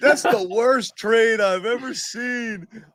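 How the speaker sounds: playing dumb. Retelling their own past reaction to a trade: mocking own dumb take. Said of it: "so dumb people like Jimmy and me were like".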